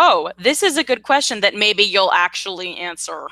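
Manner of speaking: normal talking voice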